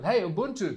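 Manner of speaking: light, mild calling out. Retelling how a woman at a nearby table called out: imitating someone shouting. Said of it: "she looked at me and she shouted".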